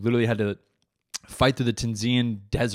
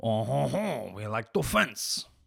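slow, put-on Parisian accent; 5 dB quieter than usual. Joking about French fencers, talking like a Parisian. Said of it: "I'm talking like one of them Paris motherfuckers".

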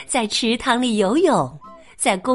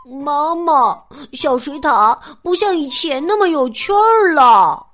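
loud, raised-voice grumbling, complaining tone; 3 semitones higher, 4 dB louder than usual. Narrator reads Franklin telling his mother about the afternoon, loudly complaining. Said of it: "他大声抱怨着".

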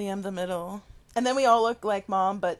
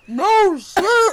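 high, loud words through a mouthful of water; 9 semitones higher, 9 dB louder than usual. Retelling tasting salt water, the speaker replays the reply; imitating talking with mouth full. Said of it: "with my mouth full of water".

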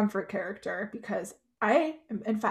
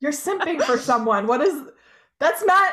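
heated, raised high voice, words breaking off; 6 semitones higher, 7 dB louder than usual. Called defensive for simping, the speaker protests: heated. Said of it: "I'm heated".

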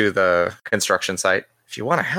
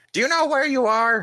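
shrill, very high shout. Someone bangs on the window, yelling at the players. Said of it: "bangs on the window and yells".

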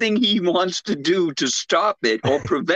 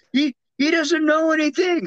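put-on scream, higher; 10 semitones higher than usual. Retelling a film scene where she is abducted: imitating someone screaming out. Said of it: "listening to her scream out".

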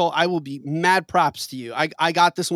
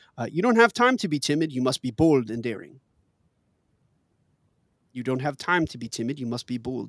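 put-on French accent; 4 semitones lower than usual. Reading a quiz clue quoted from Lumiere: Lumiere's French accent. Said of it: "that little accent there".

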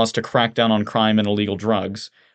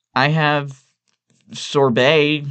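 zombie-like, dazed, flat monotone delivery; 5 semitones higher than usual. Evelyn stands unsteadily and offers her guests dessert, as if in a daze. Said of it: "she says as if in a daze".

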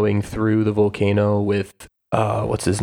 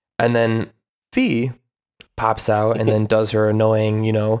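ordinary talk, nothing marked

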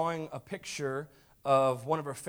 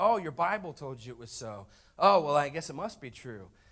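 sneering, condescending, snide mocking tone; 4 dB louder than usual. Telling a story, quoting the teacher's reply to a little girl, imitating a snide teacher. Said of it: "Kind of snidely".

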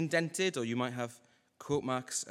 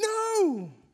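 put-on very high, drawn-out crying wail in child's voice; 6 dB louder than usual. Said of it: "He's crying and he's saying".

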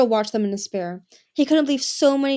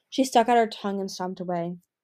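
plain

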